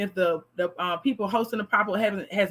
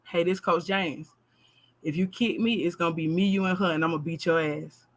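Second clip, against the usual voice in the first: whisper, lower in pitch; 4 semitones lower than usual. Retelling a warning whispered into a girl's ear: imitating own past whisper. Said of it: "I would lean in and whisper in her ear".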